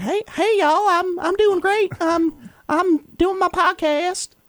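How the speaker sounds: very high pitch, slow, drawn-out, stretched voice. Imitating how a young woman talks, saying she sounds like Butters: Hawk Tuah girl impression. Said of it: "the Hawk Tuah girl sounds exactly like Butters".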